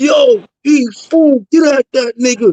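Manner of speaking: mild holler called out. Retelling how someone in the yard yelled out: imitating a yell. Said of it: "La Brim yelled out".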